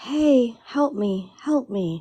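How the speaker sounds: high, drawn-out pleading voice. Retelling a voice heard from the woods: imitating a woman in need. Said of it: "Like a woman, like, in need".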